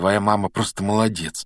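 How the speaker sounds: ordinary delivery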